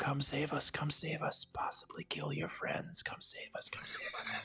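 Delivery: whispering voice. Voicing the curse's whispers to a player during a rest: whispering voice in the head. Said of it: "The whispering gets louder".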